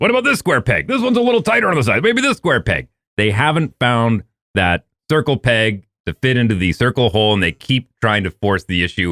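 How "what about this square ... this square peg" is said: high, fast, frantic mocking voice. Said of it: "They go".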